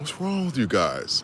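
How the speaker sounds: calm, unbothered, soft, even-tempered tone. Retelling someone's reply to the speaker's outburst, imitating a calm voice. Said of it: "in a calm voice".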